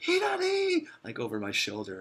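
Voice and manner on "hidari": very high, yelled call. Retelling a man calling directions after them: imitating a yell. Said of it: "he yelled back at me".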